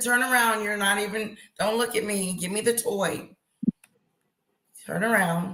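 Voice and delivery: normal talking voice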